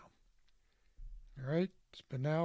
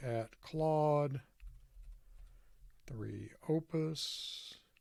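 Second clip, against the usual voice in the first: slow, deliberate spaced-out delivery. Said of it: "and say".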